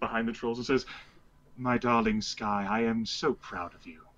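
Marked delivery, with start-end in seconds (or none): 1.6-3.9 put-on posh, cultured, refined, genteel character voice. Jarek looks Sky up and down behind the trolls and speaks to her in a put-on cultured voice. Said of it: "Let me put on my cultured voice here".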